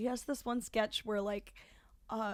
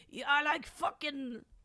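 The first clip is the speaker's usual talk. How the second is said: slow, drawn-out, unhurried delivery; 3 semitones higher than usual. Repeating an earlier podcast bit: Pete Davidson impression. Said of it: "And I also did a Pete Davidson impression".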